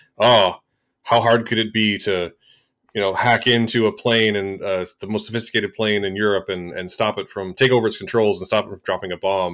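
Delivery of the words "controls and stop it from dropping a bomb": normal talking voice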